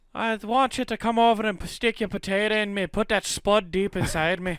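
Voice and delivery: very high, fake, put-on Irish accent. Retelling a phone call to a significant other, in a mock irish accent. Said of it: "Irish accent".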